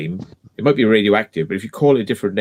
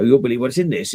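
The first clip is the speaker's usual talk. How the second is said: very bad, poor put-on Scottish accent; 3 semitones higher than usual. Quoting a man who makes teardown videos, in a very bad scottish accent. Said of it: "It's a very bad Scottish accent".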